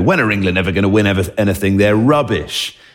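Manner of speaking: mock scornful, scoffing, taunting jeer. Speaker retelling how a man taunts them when Ireland beat England, imitating his scoffing.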